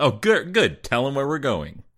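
openly sarcastic, high, swooping pitch. Explaining who says a film line, acting it: sarcastic Bodhi line. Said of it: "he's being sarcastic".

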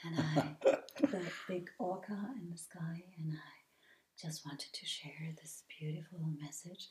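put-on very low voice. Mocking people who make videos in a very low voice, imitating that very low voice. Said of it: "speaking in this very low voice".

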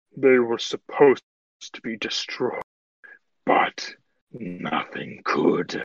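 put-on young dragon character voice. Voicing a dragon who answers the group's question, dragon character voice. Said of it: "It is a dragon somewhere between young and adult. / It is a dragon somewhere between young and adult".

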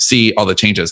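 normal talking voice

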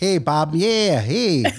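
put-on small-town Midwest Minnesota accent. Talking about rewatching Fargo, the speaker tries out a Minnesota accent. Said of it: "that was my Minnesota voice".

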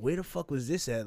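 ordinary talk, nothing marked

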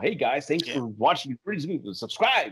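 put-on cheesy online video host patter. Speaker demonstrates the voice he doesn't want to use: cheesy YouTuber voice. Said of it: "I don't want to have the YouTube voice".

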